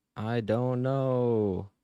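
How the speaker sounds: mock dazed, drawn-out voice, high and slow.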